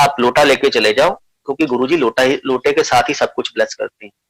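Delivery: plain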